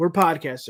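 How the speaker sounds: ordinary delivery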